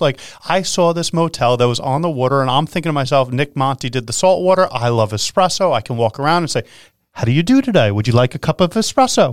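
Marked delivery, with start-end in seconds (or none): 7.1-9.3 put-on British English accent. Speaker imagines running a motel and acts out greeting guests, english accent. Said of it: "You have an English accent when you do that".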